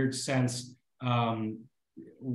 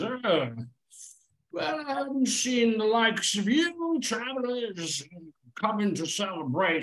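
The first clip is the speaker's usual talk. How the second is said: very high, fake slurred drunken voice; 10 semitones higher than usual. Voicing a drunken older man greeting travelers at the bar: put-on drunken slur. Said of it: "very drunk. He's slurring his words".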